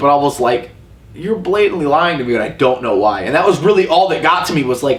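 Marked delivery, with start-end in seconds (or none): none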